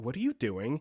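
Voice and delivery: very surprised, startled, accusing tone. Reading a story where a sleep-talker sits up: very surprised and accusatory tone. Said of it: "said in a very surprised and accusatory tone".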